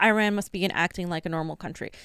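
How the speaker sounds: plain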